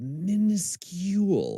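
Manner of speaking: high-pitched whispered delivery.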